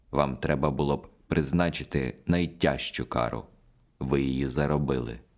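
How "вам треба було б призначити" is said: ordinary delivery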